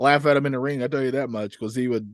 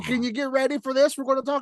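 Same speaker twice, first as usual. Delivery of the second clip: mock very high, in-your-face hype yelling; 12 semitones higher than usual. Describing a younger person in a YouTube preview talking at the camera, imitating them yelling. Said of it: "they're talking like this at you".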